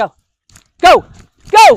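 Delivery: loud, bright, driving, egging-on tone. Running the dog through the course, calling commands: driving tone urging the dog on. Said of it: "When I'm driving her and working with her, I have one tone".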